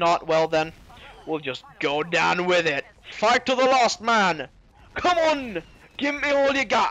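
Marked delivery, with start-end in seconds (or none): 3.1-6.9 bad, failed attempt at a Scottish accent, pitched up. Urging others on during a fight, in a failed scottish voice. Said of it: "I was trying to do like a sore Scottish voice there".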